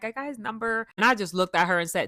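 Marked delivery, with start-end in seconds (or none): 0.0-0.9 bubbly, giddy, thrilled and delighted voice. Retelling how a friend bragged about getting a number: imitating a friend giddy and happy. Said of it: "She was all giddy and happy and smiling".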